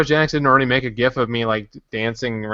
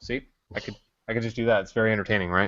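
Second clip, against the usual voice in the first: ordinary delivery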